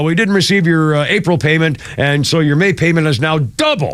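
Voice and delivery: normal talking voice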